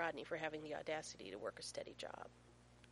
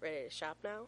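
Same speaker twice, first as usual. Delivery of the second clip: plain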